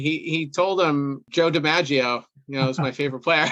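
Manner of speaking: usual speaking voice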